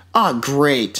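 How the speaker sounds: normal talking voice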